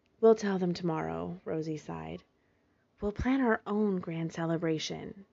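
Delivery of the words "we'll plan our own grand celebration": hushed soft whisper, much quieter. Narrator reading Jasper's line to Rosie, in a hushed whisper. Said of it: "Jasper said in a hushed whisper".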